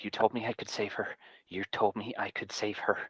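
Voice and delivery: muttered, hushed half-whisper under the breath. Voicing a character after a healing spell: half-whispering under his breath. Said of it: "Aom is whispering under his breath".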